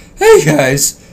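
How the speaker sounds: hey said with a faked voice crack. Closing a video, showing the voice crack that embarrasses him, fake voice crack. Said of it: "That was a good fake one".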